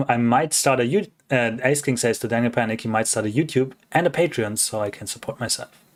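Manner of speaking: normal talking voice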